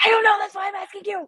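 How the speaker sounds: high, loud, exasperated delivery.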